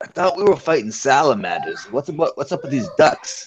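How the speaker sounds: hushed, leaning-in, confidential stage whisper. One character leans over to another during a ride, whispering. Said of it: "leans over to Neek and whispers".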